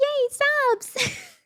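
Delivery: put-on very high-pitched voice with a little cheer. Speaker showing what they'd say after getting gifted subs, in a high-pitched voice. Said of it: "like, a high-pitched voice and be like".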